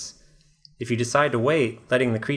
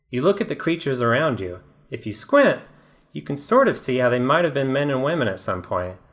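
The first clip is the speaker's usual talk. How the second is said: ordinary delivery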